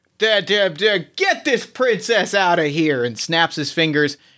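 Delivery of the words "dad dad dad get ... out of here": flustered, outwitted villain-like tone. Voicing the outsmarted villain calling for help: flustered Boss Rat voice. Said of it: "Boss Rat, flustered because you, you get outsmarted him, goes".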